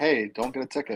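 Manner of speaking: mock courteous, well-mannered voice. Retelling what she said to him in the chat, mimicking a polite request. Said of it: "she was so polite".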